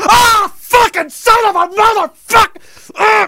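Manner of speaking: put-on, very high, furious cursing outburst. Retelling a summer day in high school, reenacting own furious yell. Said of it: "And it went on like that for 10 minutes".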